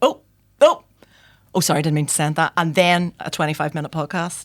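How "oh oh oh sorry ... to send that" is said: put-on loud, rattled, fumbling, flustered voice. Retelling own voice notes sent by mistake: imitating own flustered voice note. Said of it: "clips of me going".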